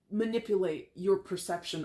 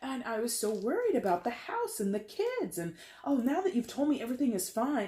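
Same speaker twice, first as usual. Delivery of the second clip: high, put-on female voice; 5 semitones higher than usual. Speaker acts out a casual remark that could trigger someone; put-on female voice. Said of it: "I hate to put on like this female voice".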